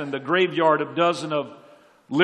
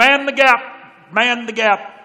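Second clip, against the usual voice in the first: very slow, loud, computerized robotic announcer voice; 7 semitones higher, 8 dB louder than usual. Remembering waiting for the subway, mimicking the computerized announcement voice. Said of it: "a computerized voice that always said".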